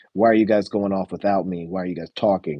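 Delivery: ordinary delivery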